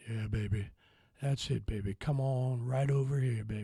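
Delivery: sexy, sultry, low, hushed seductive voice. Telling viewers to close their eyes and just listen, in a sexy voice. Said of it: "Pretty sexy, huh?".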